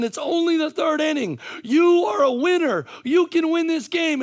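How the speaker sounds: very high, loud, shrill scream. Retelling what one screams at a son during a game: retelling own screaming. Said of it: "I'm screaming at my son".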